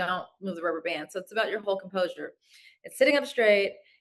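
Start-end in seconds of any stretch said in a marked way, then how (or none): none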